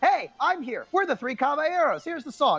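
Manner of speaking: high, sudden, out-of-nowhere mock announcement.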